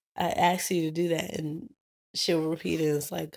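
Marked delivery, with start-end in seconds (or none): none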